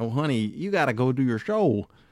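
put-on Midwestern accent in everyday casual talk. Retelling what she said while watching Jackass Forever, imitating her Midwest accent. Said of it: "she got that Midwest accent".

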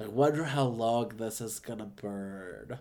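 low, slow musing drawl, burn drawn out. Imagining Clark Peters finding a ball of yarn: Clark Peters impression. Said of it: "Clark Peters is, like, my favorite impression ever".

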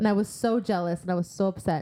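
plain

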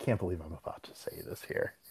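plain

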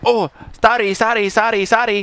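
apologetic, high repeated tone. Retelling a flight where the kid's mom reacted: imitating the mom apologizing. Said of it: "and his mom's like".

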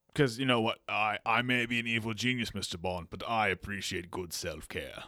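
put-on very grave, vaguely British accent. Playing an evil genius getting nails done who addresses Mr. Bond, vaguely British, very grave. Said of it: "vaguely British accent, but very grave".

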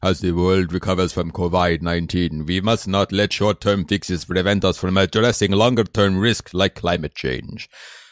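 stagey, put-on, theatrical speechmaking orator voice. Reading a World Economic Forum passage aloud: Klaus Schwab impression. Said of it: "my Klaus Schwab impression".

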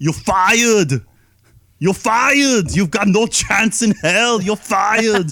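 shrill, loud, high announcer-style delivery. Playing an impression guessing game: Arnold Schwarzenegger impression as Vince McMahon. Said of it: "this was Arnold Schwarzenegger as Vince McMahon".

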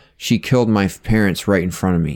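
plain

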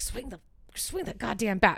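muttering low, under the breath. Quoting a boy's grandpa urging him at bat, muttering low under his breath. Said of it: "he'll say it like low under his voice".

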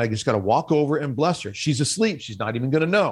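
usual speaking voice

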